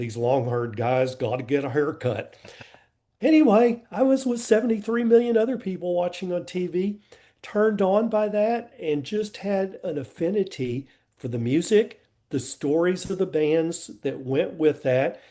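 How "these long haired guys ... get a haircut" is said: low complaining mumble muttered under the breath. Recalling a dad's reaction to long-haired bands on tv, imitating dad mumbling under breath. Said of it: "my dad mumbling under his breath".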